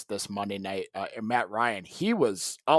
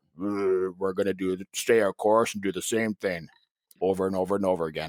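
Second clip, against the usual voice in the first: low, flat, dead-level monotone; 4 semitones lower than usual. Imitating a press conference after a loss: monotone McCarthy impression. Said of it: "So the monotone".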